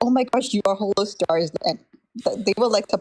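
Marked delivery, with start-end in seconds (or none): 0.0-1.5 amazed, caught-off-guard, surprised exclamation. Retelling how streamers reacted on learning who he was: imitating someone surprised. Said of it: "they were, like, surprised".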